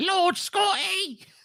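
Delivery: put-on thin, very high old British hag voice. Imitating a friend feeding someone grapes: imitating Taylor as a British hag. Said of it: "a British hag in my mind".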